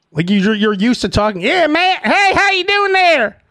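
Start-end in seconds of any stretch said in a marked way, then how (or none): 1.4-3.3 put-on Southern accent. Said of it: "someone with a Southern accent".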